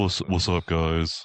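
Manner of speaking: level, flat, uninflected monotone drone. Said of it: "He just kind of is monotone, like".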